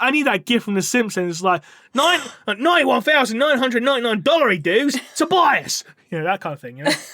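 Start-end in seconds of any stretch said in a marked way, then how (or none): 1.9-5.8 shoddy put-on Australian accent, pitched up. Speaker quoting a price in australian dollars, in a bad australian accent. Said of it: "Apologies for my shitty accent".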